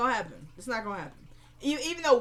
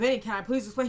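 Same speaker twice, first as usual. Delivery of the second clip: normal talking voice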